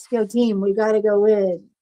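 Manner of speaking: dead-level monotone, no inflection at all. Imitating someone's locker-room team speech: flat, no inflection. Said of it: "no inflection in his voice".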